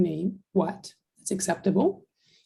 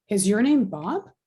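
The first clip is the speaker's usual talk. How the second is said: pitch rising on Bob. Showing an english yes-or-no question, rising pitch on bob. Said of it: "Our voice goes up".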